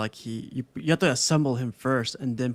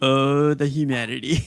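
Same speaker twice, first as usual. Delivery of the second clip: ordinary talk, nothing marked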